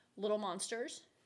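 ordinary talk, nothing marked

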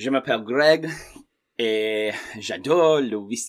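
French with passable accent. Asked by a co-host to say a sentence in French, saying a line in French. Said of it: "not as bad as you think in terms of the accent".

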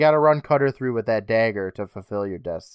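plain

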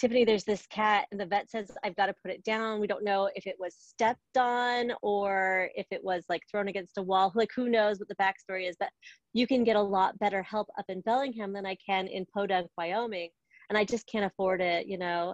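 ordinary talk, nothing marked

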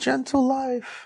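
very high, hushed, soft little voice. Trying out alternative names for a kind of life, in a high-pitched voice. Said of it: "Why you have a high pitch in your voice?".

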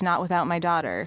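ordinary talk

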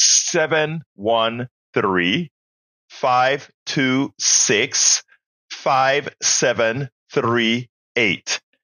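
deliberately slow pace. Repeating the pledge phone number for a fund drive, slowly. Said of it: "I'm going to repeat it slow".

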